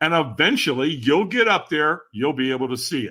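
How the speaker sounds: usual speaking voice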